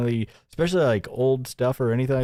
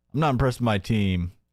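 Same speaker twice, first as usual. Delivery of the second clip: teasing, mocking put-on voice; 2 semitones lower than usual. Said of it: "He's blaming the computer team".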